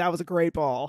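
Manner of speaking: put-on sarcastic praising tone. Showing how they joke with teenage players, retelling sarcastic praise. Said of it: "be sarcastic and be like".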